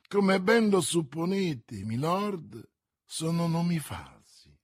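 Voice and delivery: ordinary delivery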